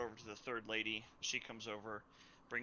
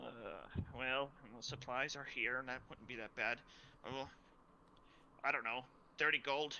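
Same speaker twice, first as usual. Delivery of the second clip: put-on odd, chittering, strange old lady voice; 2 semitones higher than usual. A game master voices an older lady selling a bag, strange chittery old-lady voice. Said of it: "And so one of the older ladies there is like, / And so one of the older ladies there is like, / And so one of the older ladies there is like, / but it's it's strange and chittery, and it's got a lot o".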